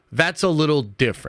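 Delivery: ordinary talk, nothing marked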